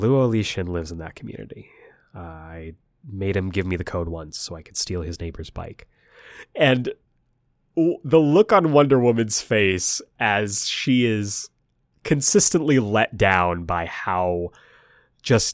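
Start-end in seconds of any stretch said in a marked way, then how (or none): 0.0-5.9 quiet, quick, sheepish delivery. Retelling his answer when everyone asked how he knew the passcode, sheepish. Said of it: "He kind of sheepishly says".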